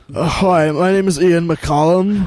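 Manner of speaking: put-on slow, drawn-out, stoned-sounding voice. Introducing yourself as Ian in front of him, do a stoned-sounding Ian McCollum impression. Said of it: "I don't sound like I'm constantly stoned".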